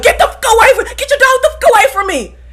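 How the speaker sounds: high, hostile, aggressive angry yell. Retelling a date's reaction to a dog: imitating an aggressive yell. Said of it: "He said it so aggressively".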